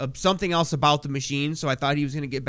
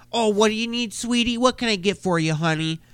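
put-on high, sweet, sugary, cooing baby talk; 7 semitones higher, 3 dB louder than usual. Mimicking how a guy talks to other women who ask him something, sweet baby talk. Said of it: "he all baby talks him and acts all fucking sweet".

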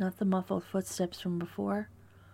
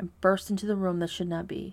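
usual speaking voice

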